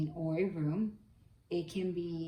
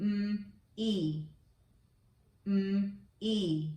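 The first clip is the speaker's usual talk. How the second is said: very slow, drawn-out, sound-by-sound phonics blending; 3 semitones higher than usual. Asking listeners to guess a word from its sounds, sounding out slowly. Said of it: "say some words very slowly".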